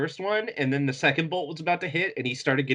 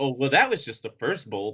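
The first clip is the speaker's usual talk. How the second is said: normal talking voice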